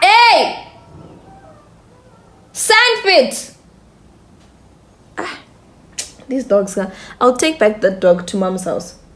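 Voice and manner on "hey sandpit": very high, loud yell. Calling out to a dog mid-talk: yelling at a dog. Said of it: "Sorry for yelling".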